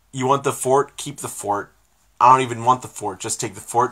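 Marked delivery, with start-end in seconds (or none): none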